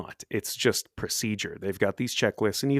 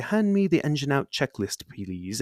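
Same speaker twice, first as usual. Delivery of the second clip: put-on cool British airline-pilot accent, pitched up; 5 semitones higher than usual. Imitating a pilot asking the co-pilot for a checklist: cool british accent. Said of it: "in a cool British accent".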